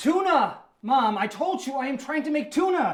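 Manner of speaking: shrill, high, rising shout. On the phone with Mom, unable to find the can opener, shouting. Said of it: "I'm shouting".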